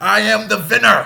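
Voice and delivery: loud, high, boastful voice in a Hungarian accent.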